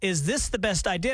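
ordinary talk

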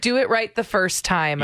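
normal talking voice

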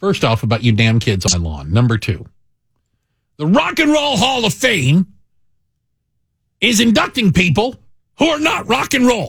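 cranky, grumpy, fatherly griping voice. A host opening a segment announces he'll sound like his dad: imitating his dad. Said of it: "I'm going to sound like my dad".

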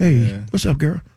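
very low, deep, seductive put-on male voice. Acting out how he might answer the phone, in a sexy guy voice. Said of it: "with the sexy guy voice".

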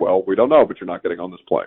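mock blunt, flat delivery. Retelling what the staff told him about his flight, retelling a blunt reply. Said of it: "very blunt and very honest".

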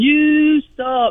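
put-on little boy screaming at full tilt, high and loud. Retelling what a six-year-old boy screamed at another boy: imitating a child screaming. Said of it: "he's screaming".

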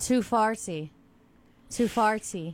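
put-on Scottish accent. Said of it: "Too Scottish accent".

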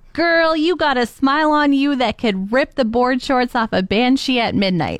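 normal talking voice

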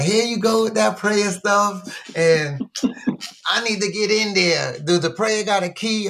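real sarcastic, high-pitched delivery. Retelling dismissing a partner's advice to pray: retelling own sarcastic reply. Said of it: "I was being real sarcastic".

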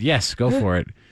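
ordinary delivery

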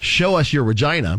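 plain

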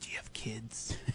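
very quiet, low, eerie, breathy murmur. Describing how they would ask the question: low, creepy voice. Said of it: "I would just creepily say in a low voice".

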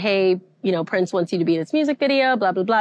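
ordinary talk

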